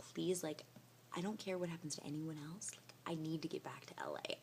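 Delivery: soft, hushed whisper. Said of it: "of me, like, whispering to her".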